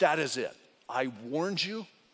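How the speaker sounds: mock strict, stern, firm fatherly tone. Retelling a father's warning to his quarreling sons: imitating a stern dad. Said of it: "very stern, very strong, didn't yell".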